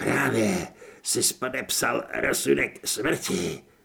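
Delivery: raspy, hoarse, creaky croak from the throat. Dripping with water, a man speaks to an agent in a hoarse rasp. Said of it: "zachrčel".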